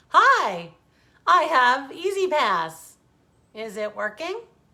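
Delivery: very loud, bright, swooping, acted cheerful tone. Narrator recalls her husband greeting each toll attendant, imitating his happy tone. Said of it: "in his happy tone".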